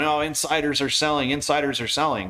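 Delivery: normal talking voice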